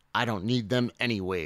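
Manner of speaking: plain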